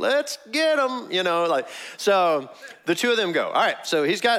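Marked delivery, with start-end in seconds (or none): 0.0-1.1 put-on very high, eager, gung-ho cry. Acting out Abishai volunteering to go with David: imitating an enthusiastic cry. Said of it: "how enthusiastic was his".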